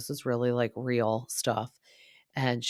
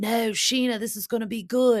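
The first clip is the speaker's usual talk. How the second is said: put-on Australian accent, very high and loud; 11 semitones higher, 5 dB louder than usual. Retelling Brock's reply to his wife Scheana, in Brock's Australian accent. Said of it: "I need to work on my Australian accent".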